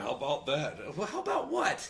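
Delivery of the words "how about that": sarcastic, mocking ad-spokesman delivery. Mocking a commercial line, imitating Peyton Manning. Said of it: "and then he's like".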